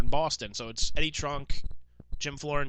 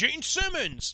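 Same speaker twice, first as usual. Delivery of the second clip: high, drawn-out yell. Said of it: "is just yelling".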